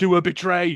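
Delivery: mock egging-on, urging yell. Telling a story about what the speaker yelled at him; retelling own yell. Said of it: "I was yelling".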